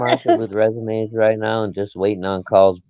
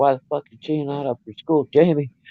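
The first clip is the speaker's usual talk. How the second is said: gentle yelling, pitched high; 6 semitones higher, 4 dB quieter than usual. A dad retelling waking his daughter for school, retelling yelling at her. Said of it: "I'm yelling at her".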